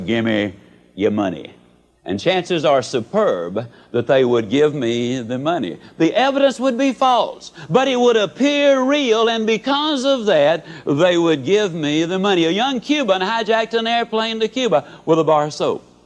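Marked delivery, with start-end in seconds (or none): 0.0-1.5 meanest voice, pitched low. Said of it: "in my meanest voice say".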